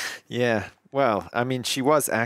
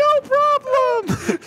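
very high, loud, swooping put-on voice; 7 dB louder than usual. Speaker acting out a bit about the pig babe, in a very high-pitched voice. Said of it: "This high-ass voice".

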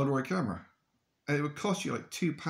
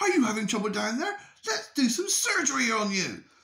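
very high, screeched, ranting screaming; 10 semitones higher, 4 dB louder than usual. Retelling how he screamed at the fish he was chopping up, retelling a scream at fish. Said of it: "he's like screaming at the fish".

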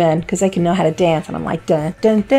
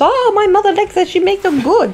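very high, clumsy put-on Cuban accent; 13 semitones higher than usual. Retelling what a Cuban woman at the market said, bad Cuban accent. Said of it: "Or however the Cuban accent is".

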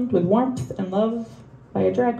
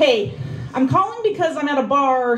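loud shouting over background crowd noise; 4 semitones higher than usual. A caller leaving a voicemail from a bar, yelling. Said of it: "so I'm sorry I'm yelling".

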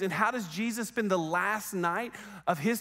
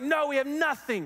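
exasperated, frustrated voice, higher pitch; 7 semitones higher than usual. Retelling a fisherman answering a stranger on the shore: frustrated shout of no. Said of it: "out of frustration".

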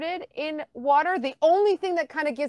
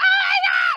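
acted, very high, mortified, panicked yelp; 5 dB louder than usual. Retelling an embarrassing accident, recalling their own reaction: re-enacting freaking out. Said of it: "Like I was freaking out".

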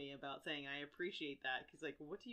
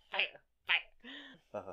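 put-on cartoon teen voice with swooping pitch; 3 semitones higher than usual. During a recording, joking around, Beavis impression. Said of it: "The dogs don't like your Beavis and Butthead impression".

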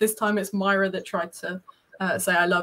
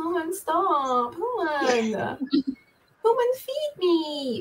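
very slow, high, drawn-out, pleading crying cat voice; 8 semitones higher than usual. Describing how his cat sounds, voicing it in a crying cat voice. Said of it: "his voice is a lot more like".

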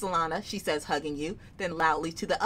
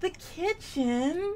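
very high, artificially sweet, fake-sweet voice; 12 semitones higher than usual. Explaining how the auntie announces the kitchen, doing Auntie Sedent's fake-sweet voice. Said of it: "like that voluntold voice".

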